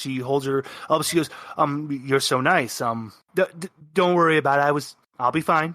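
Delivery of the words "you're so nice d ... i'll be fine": flustered, embarrassed, stammering and tripping over words. Voicing a blushing character flustered after a hug: flustered. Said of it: "She's really flustered".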